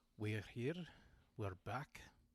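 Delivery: fake, put-on Scottish accent. Greeting listeners at the start of an episode: put-on scottish accent. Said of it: "I'm speaking in Scottish accent again".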